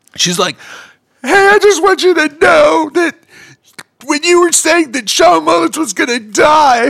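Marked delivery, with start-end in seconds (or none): 1.3-7.0 mock very high, weepy, distraught, raised crying voice. Retelling a lady coming up backstage after the show, imitating a crying woman. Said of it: "crying lady comes up to me".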